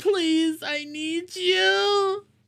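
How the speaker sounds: very high, groveling begging tone, drawn-out "you". Imagining themselves groveling on the ground for someone to come back, mock begging. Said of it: "begging like".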